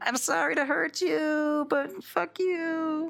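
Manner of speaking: very high, drawn-out shout, sounding far off. Voicing a man on the tenth floor calling down to the players: shouting down from above. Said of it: "shouts down".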